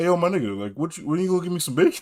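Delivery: chatty, buddy-like talking dog voice. Imagining the show's dog suddenly talking: talking dog voice. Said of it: "imagine the most hyper realistic dog being like".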